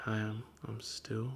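very soft, slow, soft-spoken mumble.

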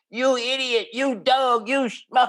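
very high, put-on hand-puppet voice. Showing how someone who was hurt can vent through a puppet: speaking as a hand puppet. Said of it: "I'm making like a puppet".

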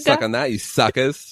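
put-on Australian accent. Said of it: "Australian, I think".

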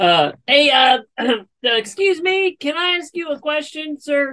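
high, slow, drawn-out, halting calling out. Calling up to a tree seer, yelling. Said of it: "You don't have to yell".

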